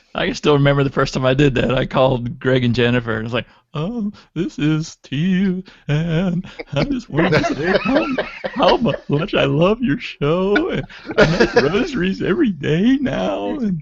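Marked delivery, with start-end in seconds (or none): 3.8-13.6 quavering nervous swooping voice, pitched up, slow. Retelling a first nervous call to a show: imitating own nervous quivering voice. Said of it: "I had that little quiver in my voice".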